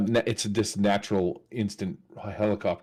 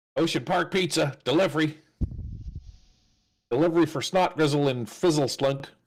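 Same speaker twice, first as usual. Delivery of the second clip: put-on high goblin voice; 7 semitones higher than usual. A player's character walks up to a door and speaks: goblin voice. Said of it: "I'll say in Goblin".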